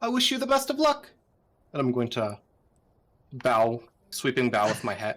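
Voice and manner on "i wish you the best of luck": loud, very high raised voice. A character bidding Fred farewell with a sweeping bow, in a raised voice. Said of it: "and I'll raise my voice".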